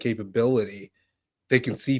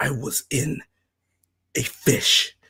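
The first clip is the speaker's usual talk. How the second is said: very slow, goofy, silly voice; 3 semitones higher than usual. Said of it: "he's gonna do it in a silly way".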